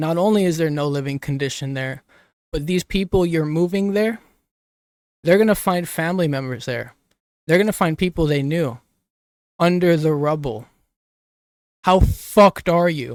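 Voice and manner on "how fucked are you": loud, slow yell full of feeling. Speaker talking on a mic, yelling. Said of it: "I'm sorry for yelling".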